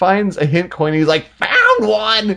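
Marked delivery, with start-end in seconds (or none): 1.4-2.4 grating, high, obnoxious little cartoon hamster voice. Describing a game, the speaker imitates its hamster finding a coin, obnoxious hamster voice. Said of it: "The hamster talks in the most obnoxious voice ever".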